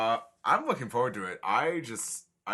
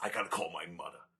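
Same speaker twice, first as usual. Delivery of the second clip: hushed, soft put-on celebrity star voice; 6 semitones lower, 9 dB quieter than usual. Showing how he really sounds after comparing another voice, do a Harvey Fierstein impression. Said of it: "sounds more like this".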